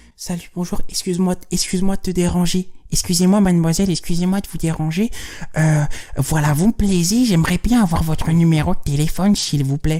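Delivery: tiny little put-on voice. Showing how not to approach a woman for her number: small little voice. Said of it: "tu prends pas ta petite voix de".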